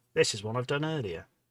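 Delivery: normal talking voice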